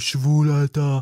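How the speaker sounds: loud, sneering, contemptuous, schoolyard taunting tone.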